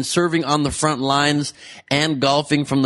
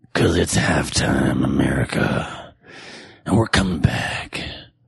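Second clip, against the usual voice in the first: very low-pitched, dragged-out delivery; 13 semitones lower than usual. Performing on request after another speaker says let me hear it: bad Clint Eastwood impression. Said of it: "my Clint Eastwood impression".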